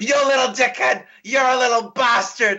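play-acted, very high, hammy, overacted screaming fit. Describing a terrible overactor in a movie once he goes crazy, imitating an overactor screaming. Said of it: "he's just screaming for entire scenes".

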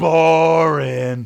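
loud, high shouting. Retelling a heckler during a comedy set: imitating a heckler shouting.

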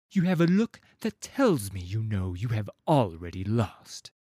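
haughty, superior, condescending tone. Henmar addresses his opponent, with a superior, condescending tone. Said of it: "with the tone of a man who believes everyone to be his inferior".

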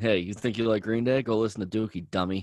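put-on mocking, teasing tone. Acting out how they would have made fun of the other speaker back then, imitating a mocking taunt. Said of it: "I probably would have made fun of you".

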